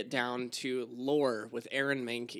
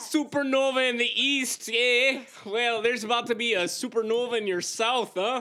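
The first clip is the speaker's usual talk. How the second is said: Minnesota accent, pitched way up; 10 semitones higher, 5 dB louder than usual. Joking around with co-hosts on a show: Minnesota accent. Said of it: "Are you channeling your best Minnesota accent?".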